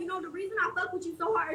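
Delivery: ordinary delivery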